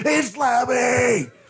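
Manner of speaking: very high, starstruck, excited scream. Retelling seeing a surprise guest walk onstage: retelling own excited screaming. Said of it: "I'm screaming".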